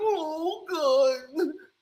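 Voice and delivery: put-on fearful, scared pleading voice. Retelling a player's reaction to someone walking up: imitating a frightened prayer. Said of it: "He's praying stuff don't happen".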